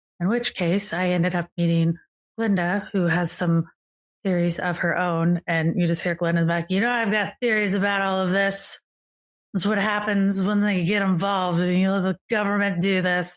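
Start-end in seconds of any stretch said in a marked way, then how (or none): 6.7-13.4 put-on drunk voice. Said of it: "I thought we'd said we weren't gonna drink as much today".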